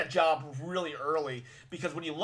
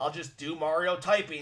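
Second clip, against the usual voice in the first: normal talking voice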